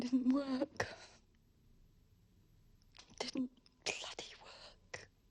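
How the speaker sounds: tearful, sobbed-out words, crying through sobs. Telling a friend the suicide attempt didn't work, crying. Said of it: "That's why I'm crying".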